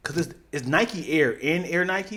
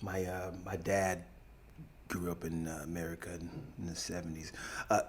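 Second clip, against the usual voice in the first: put-on American accent. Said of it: "can you do a, uh, an American accent".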